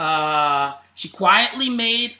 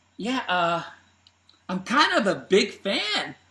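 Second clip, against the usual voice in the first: acted bashful, slightly embarrassed, slow sheepish delivery; 4 dB quieter than usual. Retelling his answer about sharing their videos: imitating a sheepish reply. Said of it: "kinda gets a little sheepish".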